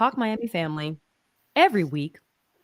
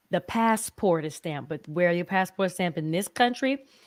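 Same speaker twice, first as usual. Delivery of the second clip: normal talking voice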